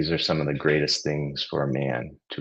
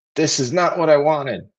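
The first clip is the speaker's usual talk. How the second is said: very high, shrill, strained-neck furious shout; 12 semitones higher, 7 dB louder than usual. Reading a story aloud, voicing a little boy's line: angry shout. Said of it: "he shouts".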